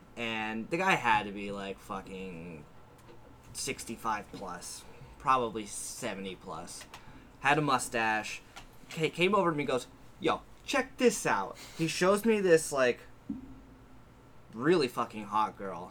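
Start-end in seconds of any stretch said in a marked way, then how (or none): 10.2-11.6 put-on very high-pitched voice, heavy New York accent. Retelling what a man came over and said to him, thick New York accent. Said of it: "a thick New York accent".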